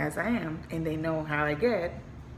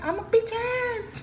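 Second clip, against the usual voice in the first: put-on much higher, slow childish voice. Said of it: "Kids are saying".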